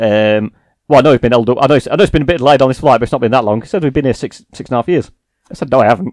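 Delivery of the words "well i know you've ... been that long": plain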